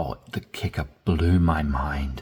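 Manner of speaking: mind-blown, dramatic, heavily stressed amazed delivery. Teaching how to use your voice to show emotion, with dramatic emphatic delivery. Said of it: "if something really does blow your mind".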